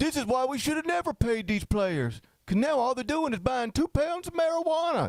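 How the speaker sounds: put-on high-pitched Southern bumpkin accent. Imitating a senator complaining about paying players: Tommy Tuberville impression. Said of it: "This is my Tommy Tu-".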